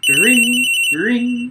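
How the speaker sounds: vocal imitation of a ringing phone. Reading game dialogue aloud, voicing a call: imitating a phone ringing. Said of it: "I don't know why I did the effect".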